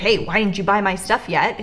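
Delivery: ordinary talk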